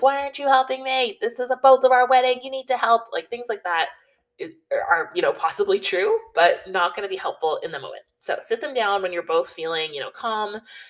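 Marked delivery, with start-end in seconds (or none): 0.0-3.0 high, loud, stressed, frustrated screaming. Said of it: "you just start screaming at them".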